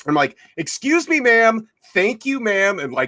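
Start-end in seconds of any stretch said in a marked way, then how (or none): 0.6-2.8 very high, slow, pointedly rude politeness. Retelling walking up an escalator past people: imitating being rude. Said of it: "kinda being an asshole".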